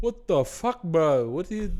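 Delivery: man's Italian-Australian accent. Showing the voices he can do: australian italian man accent. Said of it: "There's Australian Italian man".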